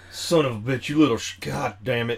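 put-on growling bartender voice. Explaining a theory about bartenders filling beer buckets, the speaker acts it out, mock growling as a bartender. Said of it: "they would growl".

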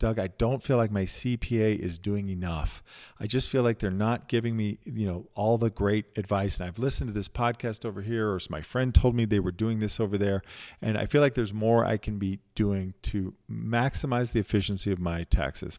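ordinary delivery

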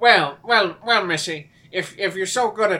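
put-on Irish accent. Staying in a voice during a scene with a partner, Irish accent. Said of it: "Are you Irish now?".

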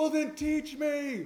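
very loud, shrill, very high scream. Retelling what someone screamed at the speaker after being mocked: retelling a scream. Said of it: "he just screamed at me".

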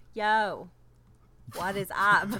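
terrible put-on Boston accent. Co-host, just introduced as the show opens, greeting back: Vera Farmiga's Boston accent. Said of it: "that's as close as I can do".

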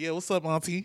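ordinary talk

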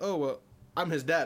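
heavy, laid-on, put-on thick Haitian accent. Acting out the dad's reply when he says whose dad he is, real thick Haitian accent. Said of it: "like a real thick Haitian accent".

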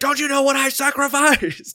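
very high, shrill, loud, anguished screaming outburst. Retelling a daily online clip: imitating Willem Dafoe screaming.

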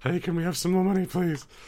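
very high, loud, nervous pleading voice. Acting out asking listeners for more money: mock nervous begging. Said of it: "nervous, ... Begging stage".

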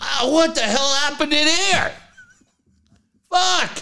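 high-pitched, disgusted, blurted outburst.

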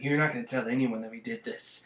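acted, menacing, threatening tone. Retelling a film scene where a girl warns another: imitating a threatening tone. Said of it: "threatening her".

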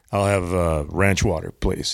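commanding, low, authoritative radio-announcer delivery. Retelling ordering a drink in front of people eating, in an authoritative broadcast voice. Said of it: "in an authoritative, very broadcast voice".

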